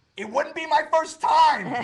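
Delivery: very loud, high shout full of attitude. Retelling a standoff with a man over directing traffic, retelling own shout. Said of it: "I shout back".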